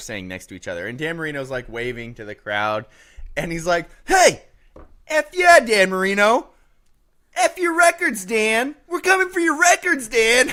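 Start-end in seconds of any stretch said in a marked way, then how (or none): 4.0-10.5 loud, very high-pitched hollering. Retelling a coach yelling at a player on the sideline: imitating someone yelling. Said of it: "he's just yelling this at him".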